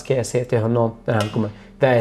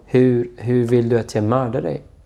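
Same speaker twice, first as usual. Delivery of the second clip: ordinary talk, nothing marked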